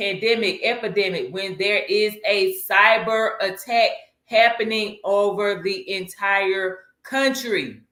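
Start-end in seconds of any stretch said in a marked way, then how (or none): 1.3-7.7 slow, deliberate, each word weighed and emphasized. Listing emergencies to be prepared for, saying the last one slow and deliberate. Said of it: "I'm saying that slow for a reason".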